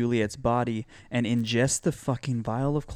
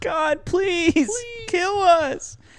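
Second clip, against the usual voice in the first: put-on very high, shrill, slow, drawn-out scream; 6 dB louder than usual. Recounting a TV scene where a family begs God, retelling a scream. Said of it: "just screaming".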